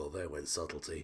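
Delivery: soft, barely voiced mutter under the breath. As a character who sees a bolt of energy flying at him: muttering under his breath. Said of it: "just mutters".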